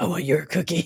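put-on demented, crazed monster voice. Voicing a horn dog character: demented Cookie Monster voice. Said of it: "he sounds like a demented cookie monster".

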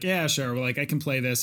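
plain

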